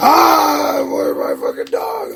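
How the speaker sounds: very high, very slow, drawn-out hollering call. Retelling a neighbor screaming for her dog: imitating someone screaming. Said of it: "just somebody just screaming out".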